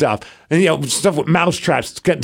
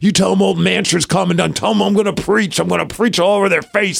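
brash, blustering, hard-edged wrestling-promo style delivery; 4 semitones higher than usual. Describing a wrestler's ring talk: imitating Mance Warner. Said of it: "And he's always".

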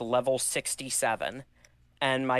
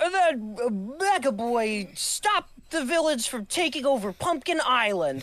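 put-on very high small child voice, mega stretched; 11 semitones higher than usual. Recalling his childhood stop-motion videos, quoting his own narration: little child's voice. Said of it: "you'd hear the little child's voice go".

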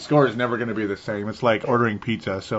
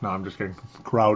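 usual speaking voice

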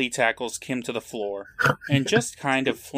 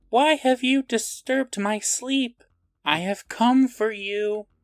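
shrill, very high-pitched mummy voice; 10 semitones higher than usual. Telling a prank story, speaking as the mummy at a sleeper's room, higher-pitched mummy voice. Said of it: "says in a higher pitched voice".

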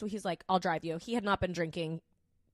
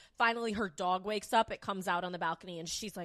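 normal talking voice

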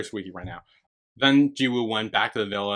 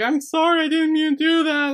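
put-on tearful little kid voice, very high, crying; 4 dB louder than usual. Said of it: "like, crying, is like".

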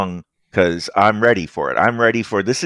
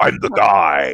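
voice deliberately forced low and deep; 3 semitones lower than usual. Voicing Dadu's brother insisting he is the one to deal with: trying to sound really low. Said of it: "he tries to like make his voice really low".

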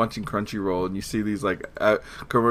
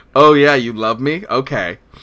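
very loud, drawn-out, slow, dismissive sarcastic tone; 4 semitones higher, 11 dB louder than usual. Showing how a sarcastic-sounding voice answers praise: put-on sarcastic tone. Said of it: "my voice just sounds like that".

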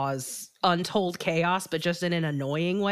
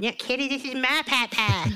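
high, pitched-up, dead-on full cartoon voice; 7 semitones higher than usual. Parent recalling walking around the house at home, doing a Cartman impression. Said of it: "can do a dead-on Cartman impression".

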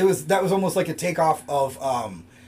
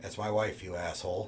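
mock calm flat deadpan, very low and quiet; 9 semitones lower, 13 dB quieter than usual. Quoting a husband who keeps finding his wife with other men: retelling a deadpan line. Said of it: "he would just very deadpan calmly say".

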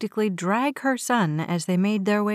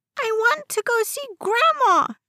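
put-on very high-pitched, shrill child's screech; 14 semitones higher, 3 dB louder than usual. A boy refuses to budge when told to be a big boy, screeching. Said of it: "he screeched".

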